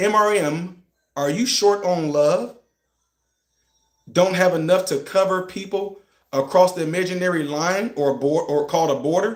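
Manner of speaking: slow, deliberate, careful, unhurried reading aloud. Rereading the same words aloud a second time, reading slowly. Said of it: "Let me try to read this slow".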